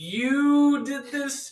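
mimicked dragged-out delivery. Imitating a friend's famous line, imitating a drawn-out line. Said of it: "he would drag it out".

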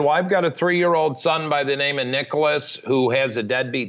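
ordinary talk

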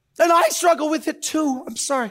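high, loud tearful speech, crying. Admitting a personal struggle during a sermon, crying while speaking. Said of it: "I'm crying".

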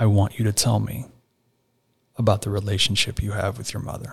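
very soft, gentle, tender, hushed voice. Retelling what a man of god asked him: the softest voice. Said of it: "with the softest voice says".

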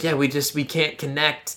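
acted disappointed tone. Speaker retelling how a woman reacted, mock-disappointed. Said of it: "she's all disappointed and being like".

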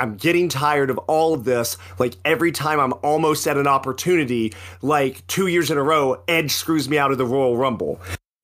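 ordinary delivery

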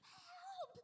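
put-on shrill, very high, loud scream. Retelling being stuck where no one could hear, reenacting a scream for help. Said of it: "I screamed loud enough".

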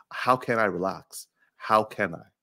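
normal talking voice

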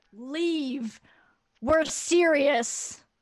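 very loud, booming, seemingly amplified voice. Player's character casts Thaumaturgy to address the people milling in the street, really loud voice. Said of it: "make her voice really loud and be like".

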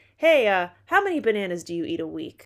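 loud, in-your-face, confrontational voice. Acting out an interviewer asking about bananas: confrontational. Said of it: "I just said it in a way like I caught you in an alley".

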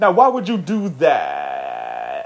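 low, slow drawl, slurred endings stretched long. Speaker recalls how a man used to talk, imitating his slurred word endings. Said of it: "he'd be like".

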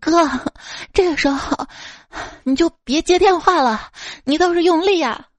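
put-on breathless shout. A man retells a female coworker shouting beside him during his wife's call, imitating breathless shouting. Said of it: "带着急促的喘气声大喊".

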